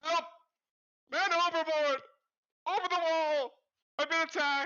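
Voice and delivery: shrill, very high, very loud cry. Voicing a falling guard calling for help: guard yelling for help. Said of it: "yelling, like".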